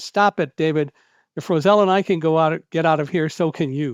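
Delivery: mock curt, sharp snap, done on purpose. Recounting how you snapped at a panicking man on the stairs, retelling a sharp snap. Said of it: "I snapped at him like that".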